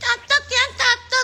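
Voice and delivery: thin, small, shrill little voice, very high. Mocking a woman's lack of authority by imitating her, Fitri's small, shrill voice. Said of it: "Suaranya kan gitu ya, kecil, cempreng gitu".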